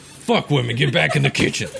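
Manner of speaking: rough, raspy, creaky voice. Showing a friend how the character Chuck Hardwood talks, Chuck Hardwood voice. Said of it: "That's Chuck Hardwood".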